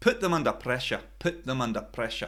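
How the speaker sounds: fast, terrible put-on Scottish accent. Demonstrating how Scottish speakers say a phrase, terrible Scottish accent. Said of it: "terrible Scottish accent".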